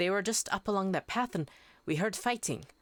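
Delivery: badly put-on Irish or Scottish accent. Narrator voicing a female character, in a bad irish or scottish accent. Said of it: "I usually default to just bad Irish or Scottish accent. I'll do it again".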